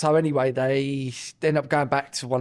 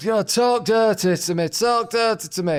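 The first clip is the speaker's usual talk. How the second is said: very slow put-on northern English accent, high, drawn out; 8 semitones higher, 4 dB louder than usual. Retelling what a northern girl kept saying: imitating a northern accent. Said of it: "She was right northern like this".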